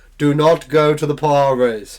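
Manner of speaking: big booming voice. Voicing a pointing prophet hand sign, in a big booming voice. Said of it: "Big booming voice".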